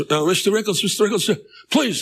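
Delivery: put-on high, pleading street beggar voice. Retelling a beggar on the street asking for money: imitating a beggar's voice. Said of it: "I use that voice 'cause that's how they sound".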